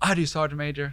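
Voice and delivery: screamed very loud. Telling a story about shouting an answer straight to a superior's face, retelling the scream. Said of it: "he's screaming at everybody".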